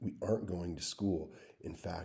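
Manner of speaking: ordinary delivery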